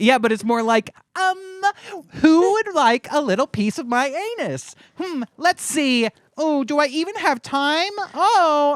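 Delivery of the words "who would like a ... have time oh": mocking fake influencer voice, pitched up. Mocking how TikTokers talk: imitating fake TikToker talk. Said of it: "it's fake".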